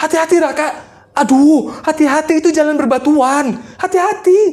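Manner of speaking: urgent panicked tone. Acting out a scene for viewers, calling out to Raka, panicked. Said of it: "Ini ceritanya kan lagi panik ya, guys ya. Lagi panik".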